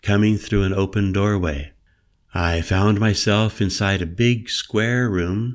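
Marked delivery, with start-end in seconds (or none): none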